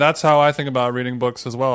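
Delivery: ordinary delivery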